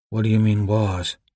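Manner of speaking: ordinary talk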